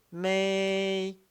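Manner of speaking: "maybe" with very long high level first tone on "may". Demonstrating the first tone for a learner to repeat: very long first tone. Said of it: "you can make make it very very long".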